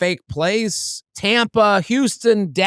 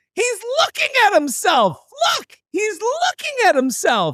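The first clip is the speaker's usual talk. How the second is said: put-on very high, swooping drunk woman voice; 12 semitones higher than usual. Comedian retelling a drunk woman pointing him out while he posts, imitating a drunk woman. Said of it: "the drunker woman comes up behind me and goes".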